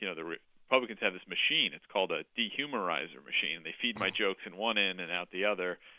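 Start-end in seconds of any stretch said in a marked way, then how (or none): none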